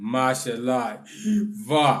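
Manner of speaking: chant-like intoned delivery. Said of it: "Then you say it again".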